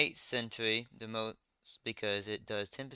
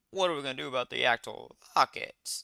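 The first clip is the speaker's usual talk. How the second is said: voice breaking partway through; 2 semitones higher than usual. Asking how to get rockets for the launcher, voice cracking. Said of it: "My voice cracked".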